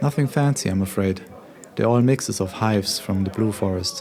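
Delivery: plain reading voice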